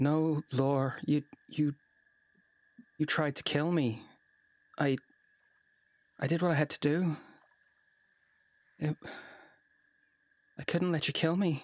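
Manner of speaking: halting, grief-numbed, stunned mumble. Voicing a character paralyzed with grief: muttering under breath, grief-stricken. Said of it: "you hear her mutter under her breath".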